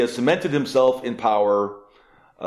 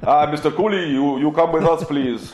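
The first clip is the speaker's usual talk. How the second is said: put-on Hungarian accent in English, higher; 4 semitones higher than usual. Acting out two agents in dark suits at the door: imitating a Hungarian accent in English. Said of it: "Is that how a Hungarian sounds when he's speaking English?".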